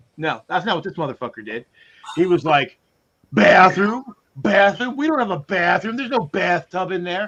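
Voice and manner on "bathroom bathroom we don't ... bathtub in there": mock loud, scornful tone. Retelling how the manager answered a request for the bathroom: imitating manager saying it loudly. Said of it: "he said it loudly to".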